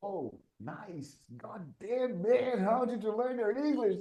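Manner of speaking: high, amazed voice.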